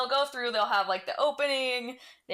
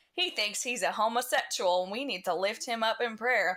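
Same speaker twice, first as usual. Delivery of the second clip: put-on Southern accent. Retelling a woman's church prayer request, in a Southern accent. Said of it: "I don't know why I adopted the Southern accent".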